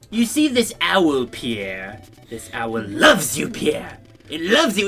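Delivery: odd put-on British accent. Retelling how a man talked to the family dog: weird British voice. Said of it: "he would have like this weird like British voice".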